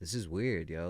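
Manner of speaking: ordinary talk, nothing marked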